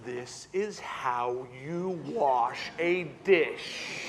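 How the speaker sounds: condescending, patronizing, sarcastic, very slow. Clarifying what 'low and slow' does not mean: patronizing, sarcastic tone. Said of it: "I'm not talking patronizing and sarcastic. Like".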